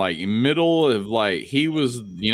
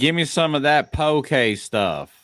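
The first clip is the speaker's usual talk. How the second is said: slow put-on Texan accent, words stretched out.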